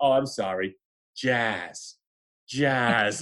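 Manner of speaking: put-on Rhode Island accent. Retelling a friend's offended reply: Jason's thick Rhode Island accent. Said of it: "he's from Warwick, Rhode Island, thick accent".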